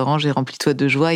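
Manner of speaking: normal talking voice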